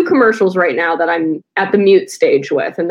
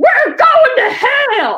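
mock street-preacher screaming rant, very high-pitched. Retelling how a masked missionary screams at people: imitating Warrenecki screaming. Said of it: "I hear him go".

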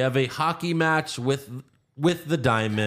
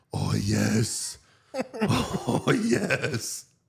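very drawn-out, slow, creaky, sexy, sultry moan. Retelling how Freeze turns knobs on the rocket: imitating a sexual moan. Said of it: "very sexually says".

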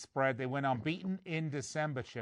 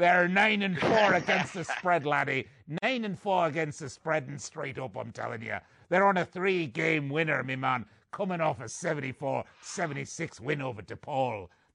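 put-on pirate voice and accent; 5 dB louder than usual. Speaker previews the Seton Hall Pirates, in a pirate voice. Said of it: "I won't do my pirate voice anymore. Okay, I will".

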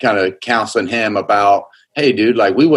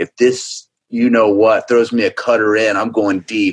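put-on, imitated whisper. Retelling what a batter whispered in his ear: imitating Schwarber whispering. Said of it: "he whispers in my ear".

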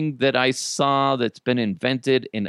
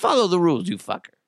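put-on crazed robot voice with Russian accent; 3 semitones higher than usual. Playing a character who just broke someone's finger, in a crazy Russian robot voice. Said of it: "I'm a crazy Russian robot".

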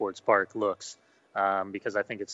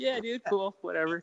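very high, laid-back Southern California dude voice; 11 semitones higher than usual. Imitating another speaker's reaction in a straight Orange County voice. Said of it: "straight Orange County".

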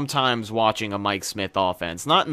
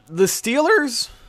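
very high, breaking, cracking voice; 3 dB louder than usual. Asking about the second half of the game, voice cracking. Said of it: "that voice crack".

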